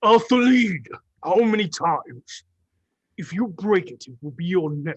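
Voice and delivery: orc voice, shouting and crying out. Voicing an orc shopkeeper scolding his assistant for breaking something: half-orc wizard crying out. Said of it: "the large arcane retailer orc cries out".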